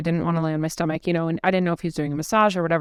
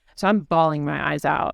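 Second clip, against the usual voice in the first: plain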